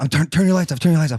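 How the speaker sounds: mock frantic, panicked, urgent freaked-out voice. Retelling pranking a friend in a golf cart about turning the lights off, acting out panic. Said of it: "So I'm freaking out".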